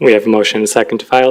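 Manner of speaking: rapid, rushed, too-fast talking.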